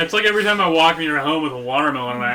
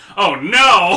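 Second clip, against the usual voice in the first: put-on villain's alarmed cry, higher and louder; 5 semitones higher, 7 dB louder than usual. Imagining a villain hearing a loud grunt: Lex Luthor crying out. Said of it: "and then you just hear Lex go".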